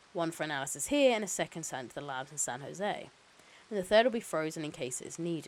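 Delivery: plain reading voice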